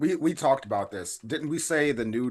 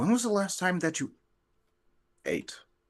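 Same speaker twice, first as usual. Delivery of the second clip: gentle, kind, pitched-up half-whisper; 8 semitones higher than usual. Leaning over to kindly ask another character something: half-whispering in character. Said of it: "lean over and whisper".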